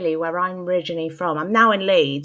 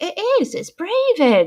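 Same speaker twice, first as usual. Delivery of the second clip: put-on very high, swooping, frustrated little-child voice; 12 semitones higher, 3 dB louder than usual. Retelling being a six-year-old no one in the room listened to, imitating a frustrated child. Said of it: "this innocent little child sort of like getting frustrated".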